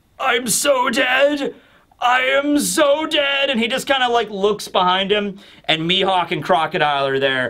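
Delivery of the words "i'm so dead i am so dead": very slow, high, blubbering, drawn-out sobbing wail. Retelling a cartoon scene where Buggy breaks down: imitating Buggy crying. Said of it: "immediately starts breaking down crying".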